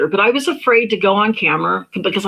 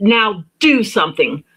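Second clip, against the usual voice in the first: put-on angry, blunt, challenging delivery. Retelling a prayer while shaking a fist at the heavens: retelling an angry outburst. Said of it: "I got mad".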